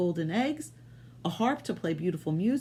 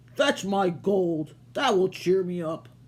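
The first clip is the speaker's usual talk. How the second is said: growling, put-on giant voice; 3 dB louder than usual. Narrator reading a fairy tale, the giant ordering his wife, growling. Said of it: "he growled".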